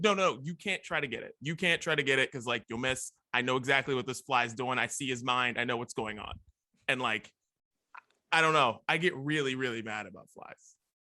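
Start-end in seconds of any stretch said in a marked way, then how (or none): none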